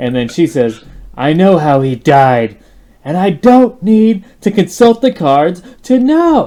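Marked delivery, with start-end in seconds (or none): 1.1-6.5 put-on drunken voice, loud, slow, drawn out. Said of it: "She sounds drunk".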